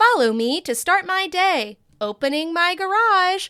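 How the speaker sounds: synthetic, high, slow female AI narrator voice. Imitate the video voice you have hated ever since it was invented, in a female AI voice. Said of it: "it's the A I voice where it's like".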